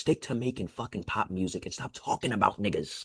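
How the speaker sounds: close whisper directly into the microphone. Starting the rundown, the speaker leans close to the mic to say this. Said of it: "Let me get close when I say this".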